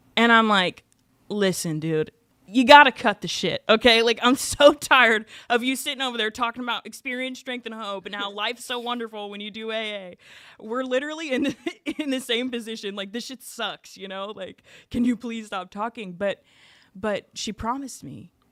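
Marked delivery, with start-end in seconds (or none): 1.3-16.2 put-on cranky, exasperated, irritable, fed-up outburst. Retelling a complaint to a woman in detox, imitating own irritable rant. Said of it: "I'm shaking and I'm sweating and I'm irritable".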